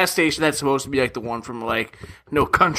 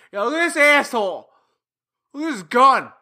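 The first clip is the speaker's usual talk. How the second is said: high, mocking jeer in a put-on voice. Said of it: "And they're like".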